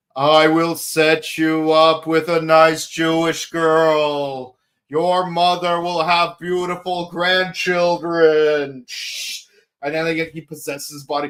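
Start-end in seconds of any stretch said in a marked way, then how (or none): 0.2-8.9 put-on slow mysterious calling voice, girl drawn out. Retelling a show scene where a voice calls to a character: imitating a mysterious voice. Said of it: "a mysterious voice calls from him".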